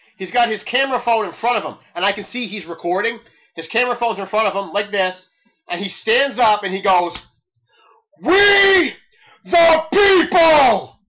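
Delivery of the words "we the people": all-out yell, very loud and pitched very high. Describing a man who stood up while recording on his phone, retelling a loud shout. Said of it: "As loud as hell".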